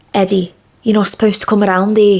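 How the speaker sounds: put-on fast Liverpool accent. Recalling playing a role in Blood Brothers, Mrs Johnstone's Liverpool accent. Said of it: "I miss doing a Liverpool accent".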